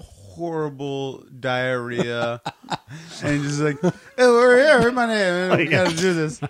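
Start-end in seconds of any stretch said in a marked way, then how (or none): 3.8-6.4 loud, rushed, rattled-off delivery at breakneck speed. Describing how he was reading aloud, imitating rushed fast reading. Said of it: "he was reading so fast".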